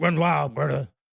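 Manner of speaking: loud, high, badly done bellowing wrestler voice. Speaker calls it a bad impression himself: bad Hulk Hogan impression. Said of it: "That's a bad impression of Hulk Hogan".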